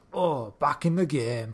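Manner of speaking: slow, drawn-out Northern English accent. Imagining a film line redone, in a northern english accent. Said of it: "if he did it in like a Northern accent".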